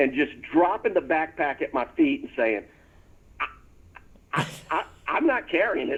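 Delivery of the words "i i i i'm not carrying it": acted nervous stammer, quieter. Retelling dropping a backpack in front of the waiting troop; imitating a nervous stammer. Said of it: "walking around that curve going, uh-oh".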